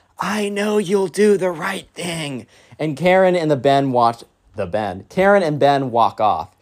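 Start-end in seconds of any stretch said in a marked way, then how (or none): 0.2-2.5 put-on whisper, higher. Retelling what a pushy parent said to a counselor: imitating a whisper. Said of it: "Then kinda whispers".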